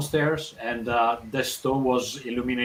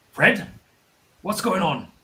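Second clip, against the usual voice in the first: put-on elderly, much older voice, pitched high; 7 semitones higher, 3 dB louder than usual. Voicing the brother answering from deep down a well: much older voice. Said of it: "a much older voice".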